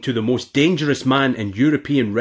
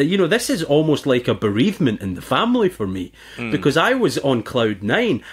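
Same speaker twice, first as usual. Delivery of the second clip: usual speaking voice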